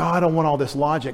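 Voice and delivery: normal talking voice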